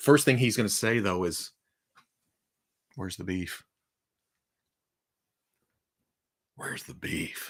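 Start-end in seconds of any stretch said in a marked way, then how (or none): 3.0-7.5 breathy character voice whispered under the breath. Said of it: "what's Man Cake's voice gonna be like?".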